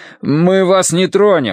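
high, slow, measured shout across a distance. A man calls out to a startled youth by a gravestone, shouting. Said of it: "крикнул Дануорти".

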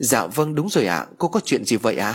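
ordinary delivery

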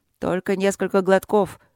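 plain

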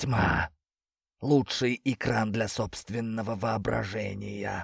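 spoken with a hiss. A narrator reads one character's line in the dark, hissing. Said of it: "— прошипел Антош".

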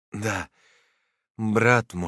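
bitter, heavy tone, soured with bitterness. A narrator voices Mr. Gordi's reply, spoken bitterly. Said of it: "с горечью сказал господин Горди".

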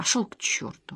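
through clenched teeth. Narrator reads a woman's reply to a man calling from the corridor, through clenched teeth. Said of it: "Сквозь стиснутые зубы произнесла она".

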